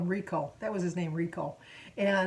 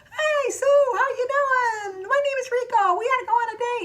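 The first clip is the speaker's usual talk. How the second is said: very high, loud hand-puppet character voice; 5 dB louder than usual. Retelling popping up a puppet to greet Sue: Rico puppet voice. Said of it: "he popped up my puppet and he go".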